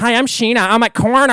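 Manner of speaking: very loud, high-pitched, belted delivery. Retelling doing the impression on stage: Scheana Shay impression. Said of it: "And then I do that".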